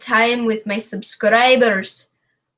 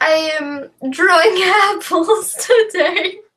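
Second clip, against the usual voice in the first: put-on British accent, high, slow and drawn out; 7 semitones higher than usual. Trying out different accents, now a British one: put-on British accent. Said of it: "let's try a British one now".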